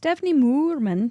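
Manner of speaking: bad fake German accent, high pitch. Reading out the name of who asks the next question, terrible german accent. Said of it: "there's my terrible German accent".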